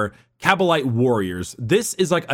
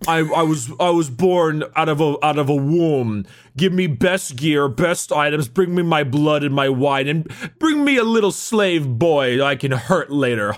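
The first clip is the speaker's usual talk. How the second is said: mock posh, snooty voice. Explaining the Drukhari trueborn, speaking as one, hoity-toity voice. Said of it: "I love your hoity-toity voice".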